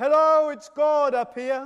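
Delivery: big, loud booming voice as if from above. Telling a joke where a man shouts up a cliff and gets an answer, in a big booming God voice. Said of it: "there's a big booming voice".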